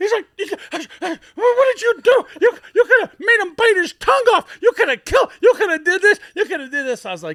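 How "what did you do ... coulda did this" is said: wild, frantic, shrill, very high and very loud yelling. Retelling how Sam Weiss reacted after breaking up the fight: imitating Sam Weiss going wild. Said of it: "he went wild. You, he couldn't even talk".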